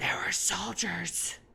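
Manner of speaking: stage whisper, still voiced. Describing how she leans in to tell you something, imitating a failed whisper. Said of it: "she whispers, or she thinks she's whispering".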